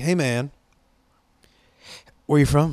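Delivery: put-on older stoner-movie character voice. Retelling what an older man said at a concert: imitating Cheech. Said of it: "he sounds just like Cheech".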